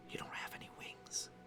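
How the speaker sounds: whispered, hushed, soft, very quiet ASMR voice. Speaker voices a yokai answering questions, in an ASMR-style whisper. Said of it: "This is this is the A S M R yokai".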